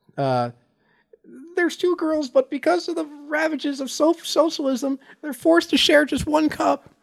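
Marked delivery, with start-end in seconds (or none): 1.6-6.8 very high, crying, whimpering lament. Reading a joke aloud as a crying imitation: Jordan Peterson crying voice. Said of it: "you gotta say it like him. That, when he's crying".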